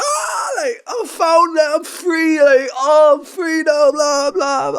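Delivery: play-acted crying through the words, bawling, sobbing wail. Retelling how a man reacted to what he was handed, imitating him bawling. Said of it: "he just started crying, like bawling".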